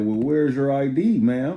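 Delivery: loud, high, snide sarcastic tone. Retelling what the lady behind the counter said: imitating a sarcastic tone. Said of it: "Being sarcastic".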